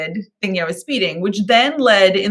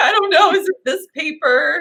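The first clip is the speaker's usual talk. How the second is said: mock very high, weepy, tearful crying; 10 semitones higher than usual. Retelling searching the dad's glove box for the registration: imitating own past crying. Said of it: "like crying".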